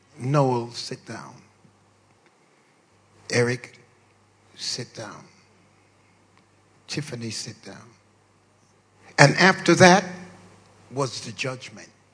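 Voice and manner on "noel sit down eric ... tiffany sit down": very soft, hushed, under-the-breath voice. Parent recalls telling their kids to sit down: retelling saying it very quietly. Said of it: "I would say very quietly".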